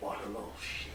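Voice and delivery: whispered mutter under the breath. Following another character and looking at her: muttered under breath. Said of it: "under my breath looking at her".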